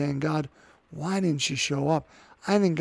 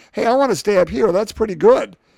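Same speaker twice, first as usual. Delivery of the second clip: loud, rambling, clueless, blurted-out chatter; 5 semitones higher, 10 dB louder than usual. Retelling the Transfiguration, speaking as Peter who doesn't know what he's saying: imitating Peter rambling. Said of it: "just talking like".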